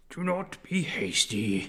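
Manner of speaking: slow, dragged-out tree creature voice.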